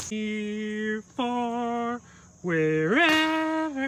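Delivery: soft, deflated, downcast sad tone, drawn out. Commenting while playing golf after taking a bogey, sad and deflated. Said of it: "That sounded sad".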